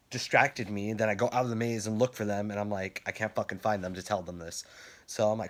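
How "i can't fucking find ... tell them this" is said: normal talking voice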